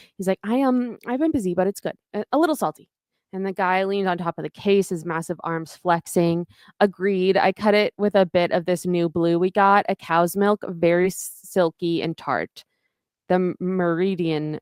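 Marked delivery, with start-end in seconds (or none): 0.5-2.9 put-on nervous stammer, higher pitch, faster pace. Retelling how William answered when asked where he'd been, imitating William's nervous stammer. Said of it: "And he's like very nervous".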